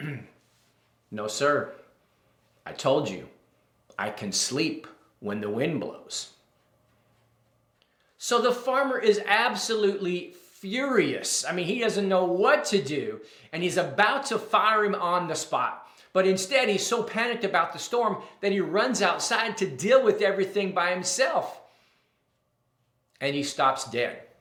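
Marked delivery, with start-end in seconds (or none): 1.1-6.3 low, calm voice. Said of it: "the old man rolls over and says calmly".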